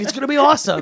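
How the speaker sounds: very high-pitched, hyped-up, overselling delivery. Retelling how the actor hyped his voice: imitating Chris Pratt. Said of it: "He's like".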